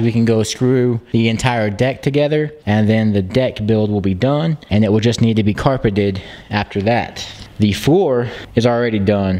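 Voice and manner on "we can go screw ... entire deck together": usual speaking voice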